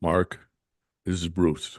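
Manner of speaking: very deep, low, bass-register voice. Retelling a phone call that came the very next day, imitating Bruce's very deep voice. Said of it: "Bruce has got a very deep voice".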